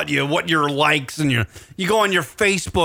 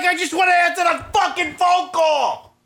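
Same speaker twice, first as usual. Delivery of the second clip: put-on very high-pitched, furious shouting; 13 semitones higher than usual. Retelling a clash with Skype while trying to answer a caller: retelling own angry yell. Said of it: "You're looking at me when you're yelling".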